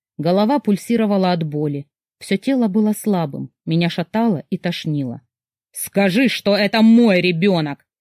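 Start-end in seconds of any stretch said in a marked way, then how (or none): 5.7-7.7 insistent, outright demanding tone. Murat, towering over the narrator, demands an answer: demanding. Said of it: "потребовал Мурат".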